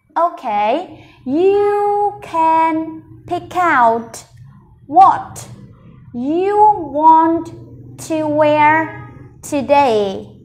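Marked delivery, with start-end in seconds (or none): 1.3-10.3 very slow reading, one word at a time. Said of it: "Mình sẽ cùng đọc cả câu này nhá".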